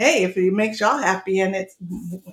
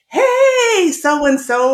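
play-acted loud, high, drawn-out hollering yell; 8 semitones higher, 6 dB louder than usual. Recounting his daughter calling out as they left her workplace: retelling a loud yell. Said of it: "she suddenly yelled out".

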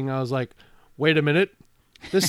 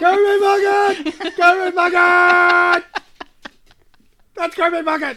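mock excited scream, higher and louder; 13 semitones higher, 5 dB louder than usual. Reenacting mom screaming on spotting a ballplayer at the airport: imitating mom screaming. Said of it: "my mom screamed".

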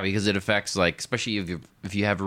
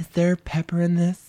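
silly put-on voice, very high; 10 semitones higher, 3 dB louder than usual. Describing friends who avoid spicy food, imitating them in a put-on voice. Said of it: "I don't know why I use that voice for those people".

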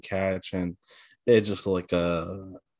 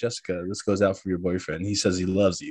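normal talking voice

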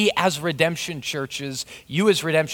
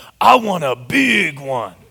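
put-on gravelly little-girl voice, loud, very slow, drawn out; 6 dB louder than usual. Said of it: "who's got a real gravelly voice".

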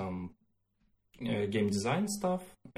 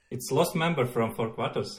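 loud mock Russian accent. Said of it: "You need Russian accent".

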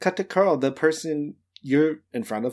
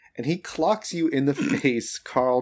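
ordinary delivery

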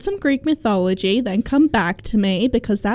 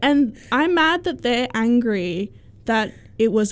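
ordinary talk, nothing marked

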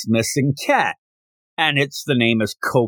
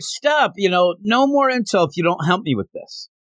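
put-on raised, yelling call; 6 semitones higher than usual. Retelling a character calling after someone walking away: imitating someone yelling. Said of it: "and he yells out".

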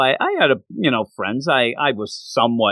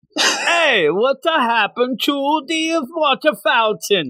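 put-on French accent, higher pitch; 12 semitones higher than usual. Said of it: "Oh, yeah, that's French".

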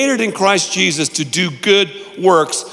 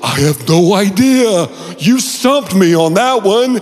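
drawn-out, very slow, fake-stumped sarcasm; 2 semitones higher, 4 dB louder than usual. Retelling a usual answer to a common question: sarcastic fake admission. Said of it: "I'm being sarcastic".

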